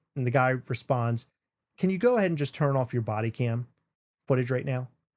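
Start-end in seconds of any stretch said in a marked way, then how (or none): 1.8-4.9 put-on whispered voice. Retelling a pulled-over sheriff speaking to a police officer; retelling a whisper. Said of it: "he whispers it".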